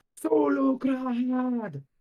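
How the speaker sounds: very high, shouting orc voice. Voicing an orc who shouts in Orcish at the players: orc shouting in Orcish. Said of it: "all you guys hear is an orc shouting".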